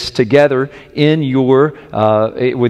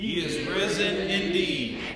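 loud joyful shout, higher pitch; 6 semitones higher, 15 dB quieter than usual. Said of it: "shout it out like you mean it".

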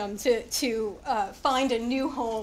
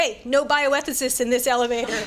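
mock firm, stern delivery; 4 dB louder than usual. Retelling a voice calling from the back of a packed elevator, retelling a stern call. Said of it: "stern voice from the back of the elevator".

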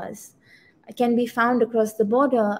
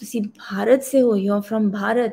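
very low, voice dropped right down. Retelling a manicurist's reply on hearing the speaker is from Delhi: imitating a very low voice. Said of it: "her voice goes very low".

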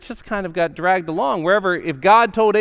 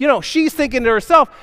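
ordinary talk, nothing marked

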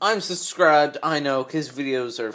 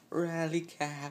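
hushed, very quiet half-whisper; 3 semitones higher, 10 dB quieter than usual. Showing viewers a quieter way to do the cheer: half-whispering.

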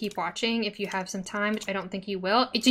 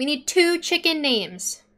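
two stressed, said slowly.

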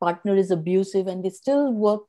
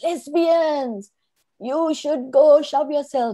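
put-on high, drawn-out yell; 7 semitones higher, 4 dB louder than usual. Recounting a man outside McDonald's yelling at the speaker and partner, retelling a loud scream. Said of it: "he just screamed out loudly".

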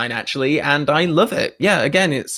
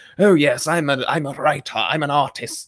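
put-on, old-fashioned, grand theatrical voice. Imitating a writer on audio commentaries: Shakespearean voice imitating Christopher Wood. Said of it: "he talks in this very Shakespearean".

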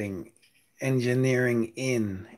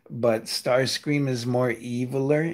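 ordinary talk, nothing marked

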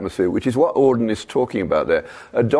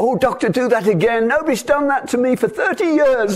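loud, very high, put-on old lady's voice. Retelling an old lady's remark on a hospital ward: imitating a loud voice. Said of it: "in a loud voice".

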